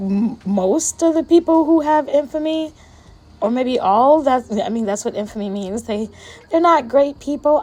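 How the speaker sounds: voice shaking and trembling as it goes. Speaker talking about people who have infamy, voice shaking. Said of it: "I don't know why my voice is shaking".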